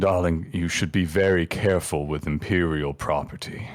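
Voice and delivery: low-key, understated aside that carries. A narrator voices a character speaking so a nearby table can hear, said quietly. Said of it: "and he says quietly".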